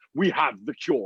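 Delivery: put-on Nigerian accent. Imitating a doctor from Nigeria announcing a cure: imitating a Nigerian accent. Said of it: "I just can't trust that accent with that message".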